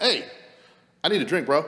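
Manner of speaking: loud, high-pitched, frustrated shout. Recounting a story about getting heated, acting out yelling at a man. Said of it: "I had to yell him".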